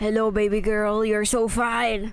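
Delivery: whispered delivery. Retelling what a stranger whispered in the speaker's ear, in a whisper. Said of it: "he whispered to my ear".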